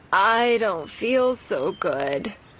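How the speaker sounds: low, scratchy croak, very slow and drawn out. Narrating a story where Sister has a fever and must stay home, Sister's low, scratchy voice. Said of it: "in her low, scratchy voice".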